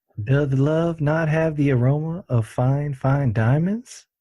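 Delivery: slow, drawn-out ladies' man voice. Saying a made-up romantic line: Leon Phelps voice. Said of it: "that sounds like him".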